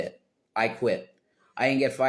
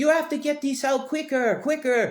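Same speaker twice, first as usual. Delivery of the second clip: put-on shrill, very high-pitched screaming voice. Retelling a manager at front of house screaming at the kitchen: imitating a manager screaming. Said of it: "she is screaming at you".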